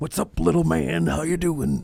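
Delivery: creaky, high, rough, slow, stretched-out put-on drawl. Retelling how an uncle would talk doing Macho Man: Macho Man voice. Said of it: "would do Macho Man".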